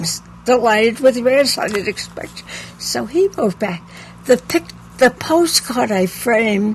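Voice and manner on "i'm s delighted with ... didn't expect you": ordinary delivery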